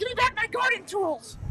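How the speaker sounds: very high-pitched little male gnome voice. Showing what a gnome would sound like, in a gnome voice. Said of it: "Like a gnome".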